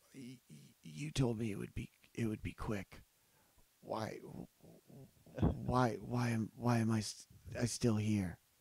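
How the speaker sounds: weak, stammering, dying gasp.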